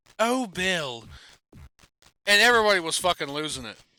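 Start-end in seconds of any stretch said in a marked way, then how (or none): 0.2-1.1 put-on English accent. Retelling what a woman kept saying that had everybody losing it: English accent. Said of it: "she would do this shit in an English accent".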